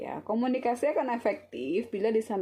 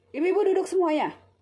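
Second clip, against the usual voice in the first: angry scolding, very high and loud; 10 semitones higher, 6 dB louder than usual. Showing how intonation changes the same instruction, as an angry command. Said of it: "Bu Bidannya lagi marah gitu ya".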